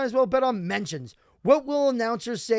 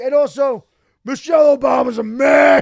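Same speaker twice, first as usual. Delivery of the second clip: put-on mimicked drunk talk, higher pitch and louder; 4 semitones higher, 11 dB louder than usual. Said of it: "He's drunk".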